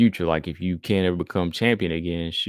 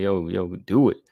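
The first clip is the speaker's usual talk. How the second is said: put-on screaming coach-style voice. Retelling how a coach urged fighters on: imitating Pena screaming. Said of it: "She was always screaming at them like".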